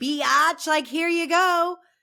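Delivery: very slow, high, drawn-out mocking sarcastic drawl. Retelling a remark from a reunion episode: imitating Seth Marks sarcastically. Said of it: "sarcastically saying".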